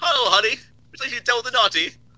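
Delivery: put-on British accent. Speaker told to do the naughty question with the British accent, British accent. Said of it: "do that with the British accent".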